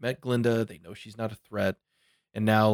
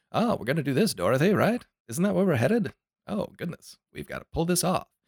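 hammy, put-on old Hollywood transatlantic accent, pitched up; 7 semitones higher than usual. Imitating old Hollywood film acting: imitating a hammy transatlantic accent. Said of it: "the transatlantic accent in Hollywood".

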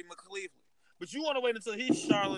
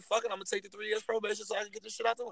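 plain

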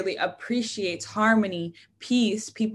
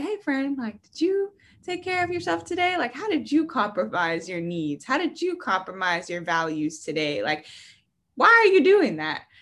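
sweet, little, calm, cute, sing-song cartoon voice; 5 semitones higher than usual. Voicing an imagined little blue cartoon, in a cute little cartoon voice. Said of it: "it's like a cute little voice".

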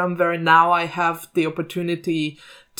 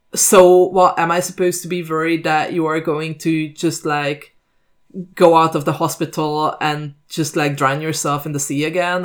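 ordinary delivery

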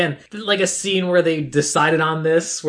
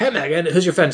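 put-on dude voice. Acting out the guys in the movie, in a dude voice. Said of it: "all the dudes actually talk like this now".

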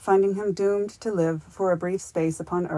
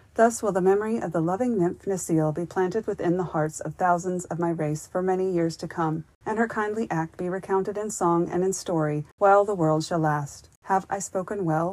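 ordinary delivery

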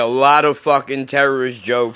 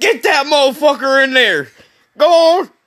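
sudden put-on Southern accent, higher pitched; 13 semitones higher, 4 dB louder than usual. Acting out a woman who suddenly turns Southern: imitating a woman in a Southern accent. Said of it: "didn't talk Southern at all".

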